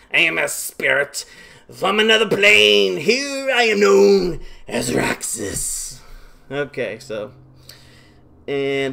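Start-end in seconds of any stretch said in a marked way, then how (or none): 0.2-6.0 raised, rough, raspy, loud, high spirit voice. Reading a game character's lines aloud: Raxus impression. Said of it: "That's my best Raxus impression".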